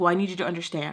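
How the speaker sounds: imitated defensive tone. Retelling a friend's reply after an argument: imitating someone getting defensive. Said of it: "She was getting all defensive".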